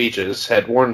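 usual speaking voice

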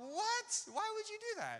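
very high, loud, shocked, disbelieving squeal.

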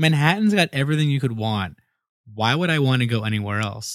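put-on dismissive, brushing-off delivery with a scoff. Retelling a Manhattan art guy's reply about Brooklyn: imitating a scoffing reply. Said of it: "he just literally, like, scoffed".

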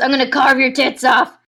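loud, yelled, shouted out. Recapping a story, the speaker acts out Henry's line, retelling Henry's yell. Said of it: "Henry yells".

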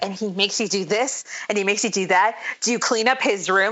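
shocked, scandalized, appalled, played-up tone. Retelling a scene where Carlton acts shocked: imitating Carlton acting shocked. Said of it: "acting like he's shocked and scandalized".

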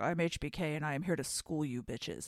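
low, dead-serious, totally serious delivery. Retelling a wrestling ad, imitating HBK very seriously. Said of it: "in a very serious face. He's like".

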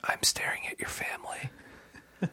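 slow, hushed, whispered mutter under the breath. Imagining what Wilson says while looking at the Taylors: Wilson muttering under his breath. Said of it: "under his breath".

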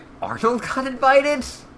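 very high, angry, outraged put-on outburst. Retelling what others said about someone getting invited, mock-angry. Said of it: "Angry they were".

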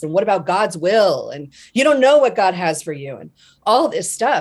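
acted-out screaming. Retelling what a woman screamed at the speaker over the phone: retelling someone screaming. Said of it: "she was screaming at me like".

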